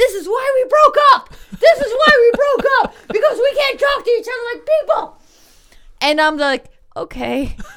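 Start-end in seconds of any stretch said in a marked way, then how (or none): 0.0-5.2 put-on high, raised, screaming-match yelling. Recounting a couple's argument, quoting the man's closing words: retelling a yell. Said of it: "yelling like".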